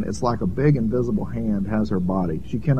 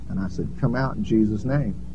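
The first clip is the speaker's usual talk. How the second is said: normal talking voice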